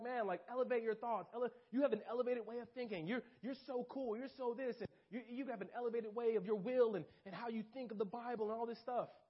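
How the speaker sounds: heavily flattering, tempting voice. A speaker describes how Satan tempts people, imitating Satan flattering. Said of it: "He's like".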